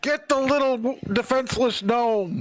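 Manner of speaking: very high-pitched, shrill, in-character goblin shout. Playing a character shouting through a door, in-character shout in Goblin. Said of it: "I will shout in Goblin".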